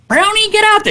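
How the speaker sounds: voice pushed way up high. Retelling his dad's story, the speaker quotes Bob McCammon: Bob McCammon high voice. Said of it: "He had a high voice too".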